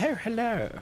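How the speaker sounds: strong, heavy British accent. Showing an attempt at a stronger British accent. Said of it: "my attempt at a stronger British accent. I can do that. Like".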